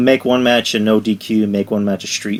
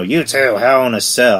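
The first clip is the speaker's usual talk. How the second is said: strained, throat-straining announcer-style voice; 2 semitones higher than usual. Retelling how a wrestling boss books a match: Vince McMahon impression. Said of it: "my voice hurts from doing that, that impression".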